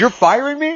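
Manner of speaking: high, stunned, shocked disbelief. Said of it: "He was in a state of shock".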